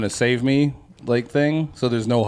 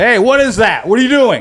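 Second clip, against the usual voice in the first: raised, high, loud voice; 10 semitones higher, 8 dB louder than usual. Showing how they give her something else to think about: retelling a raised voice. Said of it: "So I'll raise my voice like".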